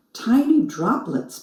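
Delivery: plain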